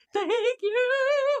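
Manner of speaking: acted, very high, tearful breaking-down sob. Retelling a phone call after breaking down, imitating crying while thanking. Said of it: "And then I just lost it".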